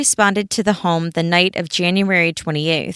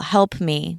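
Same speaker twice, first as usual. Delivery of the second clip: normal talking voice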